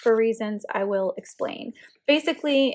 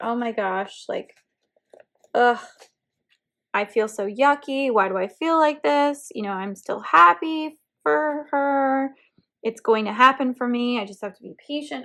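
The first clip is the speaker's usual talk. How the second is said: play-acted, heightened, emotional, frustrated venting. Retelling own thoughts from a frustrating moment: retelling own frustrated venting. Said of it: "I was really frustrated and having a moment".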